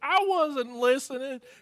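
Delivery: high, mild half-yelled outburst, acted in character. Voicing a character who gets caught listening: screaming in character. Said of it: "He just screams".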